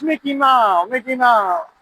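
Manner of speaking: put-on Thai accent in cartoon mouse voice. Telling how a man kept saying a nickname, imitating a Thai accent. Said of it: "But with the Thai accent".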